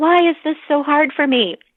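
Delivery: high yelling. Retelling a therapy session where she yelled at the therapist: retelling own yell, put on. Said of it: "just yelled at our therapist".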